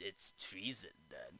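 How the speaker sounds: very low, deep, declaiming voice. Retelling a movie scene as the Chancellor draws a lightsaber: imitating Chancellor Palpatine. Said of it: "he's like".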